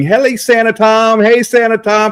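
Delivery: put-on high, drawn-out little girl hollering. Retelling how a neighbor girl calls out to him: imitating a girl screaming. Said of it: "she's screaming".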